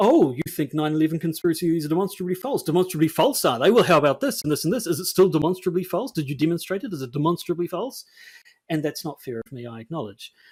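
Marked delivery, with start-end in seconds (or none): 0.0-8.0 loud, snide, needling, snarky sarcastic tone. Speaker recalls the tone he kept reading it in: mock-snarky sarcastic tone. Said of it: "I was still reading it in the tone of".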